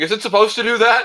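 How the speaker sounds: shrill, very high, full-volume scream. Retelling how a plane passenger reacted to mist: imitating someone screaming.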